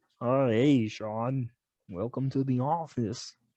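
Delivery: slow, cartoonish puppet-show voice. Speaker imitates his old boss welcoming him to the office, in a Muppet-like voice. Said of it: "It sounded like a Muppet".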